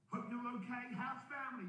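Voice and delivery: breezy, very high-pitched, casual tone.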